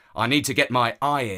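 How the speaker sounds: plain reading voice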